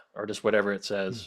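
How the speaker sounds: plain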